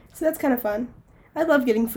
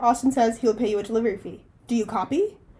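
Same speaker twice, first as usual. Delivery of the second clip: ordinary delivery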